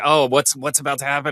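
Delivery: put-on seriousness. Imitating people in the Situation Room sitting very seriously: imitating people sitting very seriously. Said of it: "everybody's sitting there very seriously".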